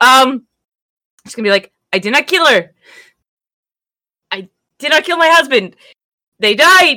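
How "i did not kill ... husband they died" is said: put-on Scottish accent for a character. Voicing a gnome character in a Scottish accent, pleading innocence to guards. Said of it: "Give me a Scottish accent again".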